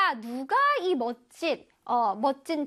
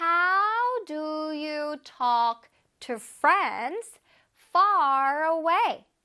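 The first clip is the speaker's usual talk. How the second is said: very slow, careful reading aloud. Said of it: "천천히 시작".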